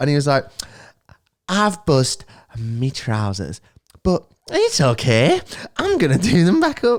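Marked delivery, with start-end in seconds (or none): 1.5-7.0 high, swooping, drawn-out cartoon character voice. Describing a man whose voice changed after his hangover; imitating his cartoon-character voice. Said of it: "started talking like a cartoon character".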